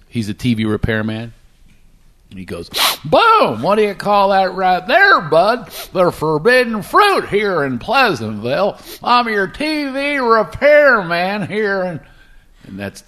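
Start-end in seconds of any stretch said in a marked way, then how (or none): 3.1-11.9 put-on high-pitched elderly man voice. Redoing a dubbed movie line as a TV repairman: old Don Knotts voice. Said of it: "I had to imitate him as an old guy".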